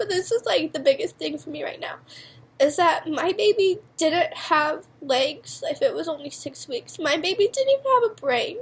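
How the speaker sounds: talking through real tears, tearful crying speech. Sharing something painful, apologizing while seriously crying. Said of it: "I'm like seriously crying about this".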